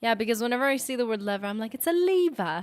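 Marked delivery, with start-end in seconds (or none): 1.7-2.6 put-on, raised, high-pitched nerdy British accent. Saying the word lever the way it needs saying, put-on nerdy british accent. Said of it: "levers turn nerdy British".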